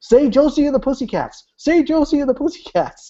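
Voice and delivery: acted-out very high shrill screaming, repeated insistently. Telling about a friend screaming at the radio while driving, imitating a friend screaming. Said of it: "screaming at the radio".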